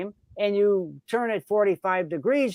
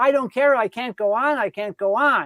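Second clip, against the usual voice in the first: acted-out desperate pleading, mock, pitched higher; 3 semitones higher, 4 dB louder than usual. Telling a canoe trip story, acting out a man's words, imitating someone pleading. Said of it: "He's pleading".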